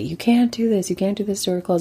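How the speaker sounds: angry, accusing yell. Retelling a scene where he yells at Sally: imitating someone yelling. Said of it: "he just starts yelling at Sally".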